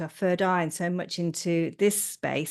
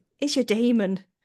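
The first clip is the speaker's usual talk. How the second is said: put-on Irish-accented delivery, pitched up; 5 semitones higher, 4 dB louder than usual. Retelling what Thomas said to them: imitating an Irish accent. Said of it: "in that Irish accent, the way he goes".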